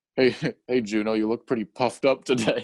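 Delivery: teasing, ribbing, mocking tone. Retelling how J K Simmons's character, the kind dad, teases Juno: imitating J K Simmons's character teasing. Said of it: "making fun of her".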